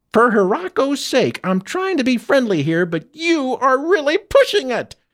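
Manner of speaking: high-pitched, shrill yelling. Narrating a story: Fester beats on the ship's hull, yelling.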